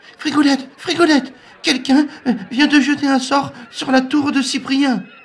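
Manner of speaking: frantic, very high whimpering panic. A narrator voices a character rushing in with bad news, totally panicked, whimpering. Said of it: "tous les membres des échoppes catalanes et des régions invitées entourent la poule qui enchaîne en pleurnichant".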